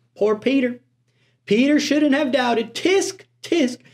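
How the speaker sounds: put-on high, judgmental, tsk-tsking country accent. Imitating finger-wagging churchgoers judging Peter: imitating churchgoers in a country accent. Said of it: "they're in a country accent".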